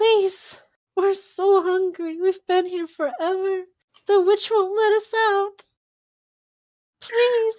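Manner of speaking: very high, very loud, weepy, tearful pleading. Voicing little girls in a well begging to be let out: pleading as if crying. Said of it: "they look like they might be crying".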